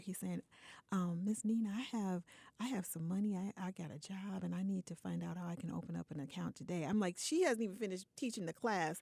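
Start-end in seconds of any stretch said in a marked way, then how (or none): 1.2-6.8 acted-out, imitated whisper. Telling how a student knelt beside her during class to ask something: retelling a whisper. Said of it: "he's whispering in my ear".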